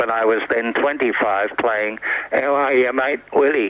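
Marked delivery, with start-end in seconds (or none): 2.3-3.7 small, husky, grumbling, grumpy character voice. Speaker recreates a line he played on the air at twenty-five, put-on grumpy husky voice. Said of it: "a little grumpy voice on the air, little husky voice rather".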